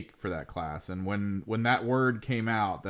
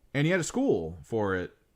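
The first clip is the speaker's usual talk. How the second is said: plain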